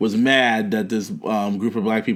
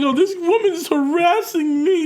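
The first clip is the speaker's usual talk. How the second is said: very high, slow, drawn-out fake sobbing. Retelling what a crying woman said to the cops: imitating someone crying. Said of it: "'cause she was crying. She's like".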